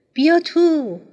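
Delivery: very high, passionate, eager and cheerful. Narrator reads a character inviting the narrator in, passionate and cheerful. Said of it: "با لحنی پرشور و شاد گفت".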